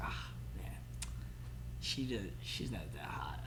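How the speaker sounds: hushed, whispered, inward aside.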